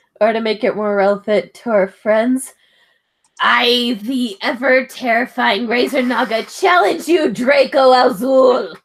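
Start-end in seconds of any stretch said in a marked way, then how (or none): 3.4-8.7 slow, dragged-out monster-of-the-week voice. Playing the Razer Naga as a monster issuing a challenge: Razer Naga monster voice. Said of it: "my monster impersonation".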